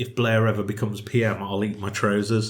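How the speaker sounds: ordinary talk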